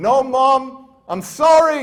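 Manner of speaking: very slow, high, loud, desperate drawn-out scream. Retelling being hurt as a child by the mom: imitating own screaming plea. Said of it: "I'm screaming for my life".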